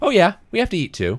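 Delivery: put-on very high, dry, matter-of-fact deadpan delivery. Retelling a teacher's reply to a class question: imitating a deadpan delivery. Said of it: "he was completely deadpan".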